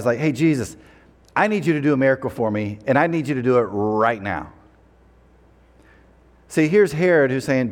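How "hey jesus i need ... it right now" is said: put-on blunt delivery. Retelling a ruler's demand for a miracle: imitating a blunt demand. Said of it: "he's pretty blunt".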